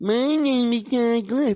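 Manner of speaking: sarcastic, teasing, slow, high mocking drawl. Speaker replays how Rory Scovel said his name, in a Rory Scovel mocking imitation. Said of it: "It sounds like he's making fun of me".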